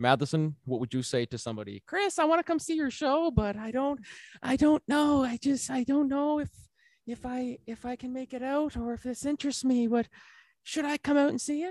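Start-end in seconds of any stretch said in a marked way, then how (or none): 2.2-11.7 put-on grandma voice, much higher, slower. Asked what someone would say, he plays his grandmother in a grandmother impression. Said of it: "Was that your grandmother impression again?".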